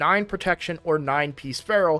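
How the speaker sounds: ordinary talk, nothing marked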